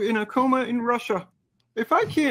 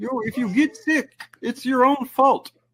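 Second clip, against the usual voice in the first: put-on, earnest, professorial lecturing voice. Joking with others about people getting sick, in a Jordan Peterson voice. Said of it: "your Jordan Peterson voice".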